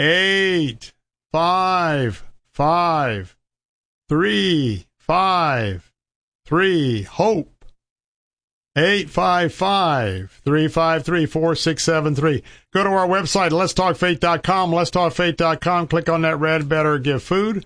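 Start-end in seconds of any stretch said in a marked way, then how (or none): 0.0-12.4 slowed-down delivery. Repeating a donation phone number for callers, said very slowly. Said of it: "I'm going to do it slow now".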